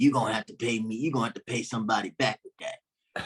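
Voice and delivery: raspy put-on voice. Telling a story about Redd Foxx, the speaker quotes him: raspy Redd Foxx voice. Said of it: "Red Fox in his raspy voice".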